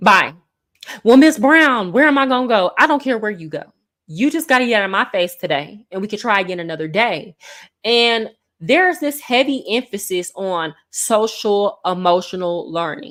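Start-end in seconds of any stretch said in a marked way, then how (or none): 1.0-2.7 mouthy, sassy, lip-smacking, with attitude. Retelling a student who came into class with attitude: imitating a student with attitude. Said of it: "smacking your lips and with an attitude".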